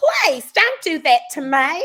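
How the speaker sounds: put-on high, loud, slow Southern accent. Retelling playing a little Southern girl in a play: Whitley accent. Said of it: "I gave her a Whitley accent".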